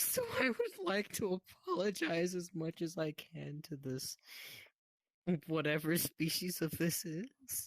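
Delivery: high, tearful speech through crying. Speaker talking to someone who comforts them, crying while talking. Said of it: "I am seriously crying about this".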